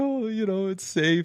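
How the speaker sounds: tearful, relieved voice. Retelling being found injured by a rescuer, imitating own teary voice. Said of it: "I literally had, like, tears in my eyes".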